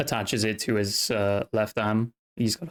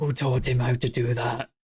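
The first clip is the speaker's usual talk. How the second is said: whispering in a character voice. Voicing a character who leans over to Emrys: whispering as a character. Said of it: "whispers to Emrys".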